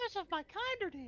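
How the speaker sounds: very high, squeaky character voice. Showing the game master how the mushroom boy should sound. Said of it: "I kinda want him to sound like".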